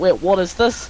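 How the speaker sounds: ordinary talk, nothing marked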